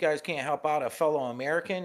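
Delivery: loud indignant yell. Retelling being refused use of a food card: imitating himself yelling. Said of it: "I said loud as shit".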